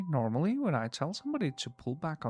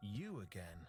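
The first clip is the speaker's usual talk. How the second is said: barely audible, very quiet, patronizing, condescending tone; 4 semitones lower, 16 dB quieter than usual. A man being questioned sees the questioner again, condescending. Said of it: "What's up with that condescending tone?".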